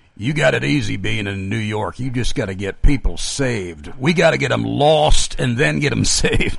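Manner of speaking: put-on rough, very gravelly Mississippi preacher's accent. Retelling what a reform preacher from Mississippi said, in his very gravelly accent. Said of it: "he said with his very gravelly accent".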